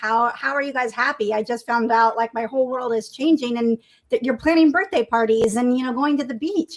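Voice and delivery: ordinary talk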